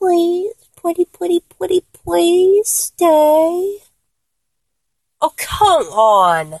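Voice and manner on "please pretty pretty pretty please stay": high, slow little bitty voice. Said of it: "do that kind of voice the way you did".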